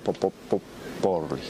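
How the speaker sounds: soft, breathy stammer on the word pop. Show how Ceaușescu stuttered when addressing the people: stuttering Ceaușescu impression. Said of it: "Intra în bâlbăială și spunea ceva la modul ăsta".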